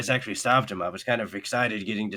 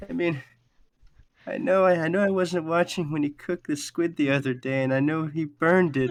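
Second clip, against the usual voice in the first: put-on tearful sniffling voice, higher pitch; 7 semitones higher than usual. Voicing a sad character who sniffles as she explains: sniffling, on the verge of tears. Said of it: "she goes".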